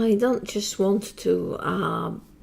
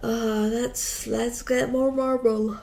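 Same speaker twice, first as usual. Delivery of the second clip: speaking through a yawn, higher; 3 semitones higher than usual. Playing a crafting game while very tired, speaking through a yawn. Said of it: "Sorry, I'm yawning".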